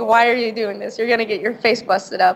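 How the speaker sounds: mock tearful, crying voice. Retelling how mom and grandma reacted to the news; imitating crying relatives. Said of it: "my mom and my grandma started out crying".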